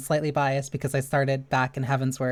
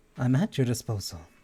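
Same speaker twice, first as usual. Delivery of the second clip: monotone, flat game character voice. Showing how easily they can do a game character's lines: monotone game character voice. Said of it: "That's very much in my range".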